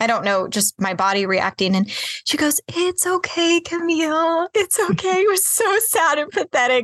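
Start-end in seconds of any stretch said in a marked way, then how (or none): 2.7-5.2 mock shaky comforting voice, high and slow. Retelling her mother comforting her at night: imitating mom's soft shaky voice. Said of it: "my mom's, like, soft, shaky voice".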